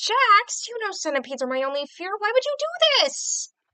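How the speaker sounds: very high-pitched cartoon character voice. The speaker performs a favourite Ragatha line to Jax in Ragatha's voice. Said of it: "It's a good Ragatha line I could do".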